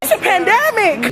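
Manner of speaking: mock emphatic delivery, high and loud.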